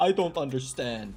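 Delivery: normal talking voice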